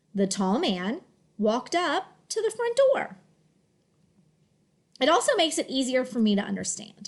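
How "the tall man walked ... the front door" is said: smooth, flowing reading in phrased word groups. Showing learners a smooth reading in phrase scoops: smooth phrased reading. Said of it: "three scoops to make that sentence sound smoother".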